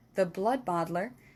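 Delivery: plain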